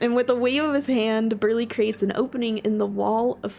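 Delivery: ordinary delivery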